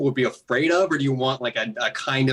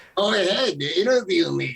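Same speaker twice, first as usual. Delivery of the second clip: put-on scary old man voice, much higher; 6 semitones higher than usual. A puppet answers an interviewer's request, in a scary old man puppet voice. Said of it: "so I want the scary puppet".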